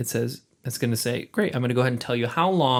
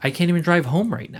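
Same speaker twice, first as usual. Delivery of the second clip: frantic, high-pitched, panicky outburst; 5 semitones higher than usual. Retelling being miles from home and needing to reach mom, imitating own panic. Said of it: "And I'm panicking".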